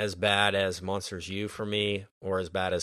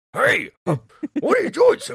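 bad cartoon voice, shrill, loud, high squeal; 11 dB louder than usual. Recounting a kids' movie scene, mimicking the warthog: bad Pumbaa impression. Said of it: "it's the worst Timon and Pumbaa impression".

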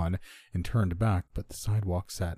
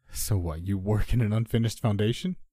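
usual speaking voice

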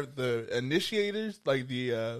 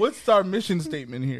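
usual speaking voice

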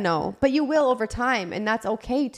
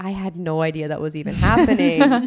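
usual speaking voice

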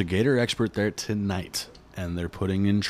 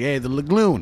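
loud, high-pitched put-on Florida accent; 5 semitones higher, 5 dB louder than usual. Retelling how a man asked his dad something: imitating a Florida accent. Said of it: "Is this a Florida accent?".

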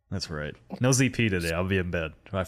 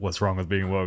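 ordinary talk

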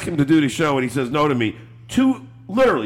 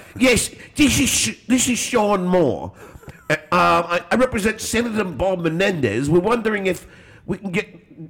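bad put-on English accent, slower; 5 semitones higher than usual. Retelling a phone call made under a put-on persona: bad English accent. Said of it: "I'm going to do it in the English Sean accent".

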